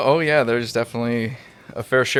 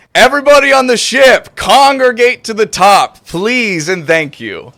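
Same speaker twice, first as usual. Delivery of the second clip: amplified booming shout, very loud and very high; 11 semitones higher, 9 dB louder than usual. Player's character magically amplifies the voice to call everyone on the ship; booming as loud as possible. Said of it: "thaumaturgy my voice to boom as loud as possible".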